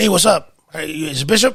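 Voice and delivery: raspy impersonation. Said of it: "my impersonation of him".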